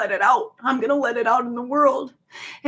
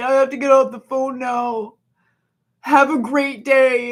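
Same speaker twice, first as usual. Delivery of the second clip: put-on lifeless, dispirited flat voice, louder; 4 dB louder than usual. Retelling how someone ends a call while being begged, imitating a lifeless flat voice. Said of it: "in spirit ass voice".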